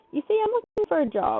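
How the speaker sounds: polite customer-service voice. Switching voices to ask a girl for a job, in a customer service voice. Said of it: "customer service voice".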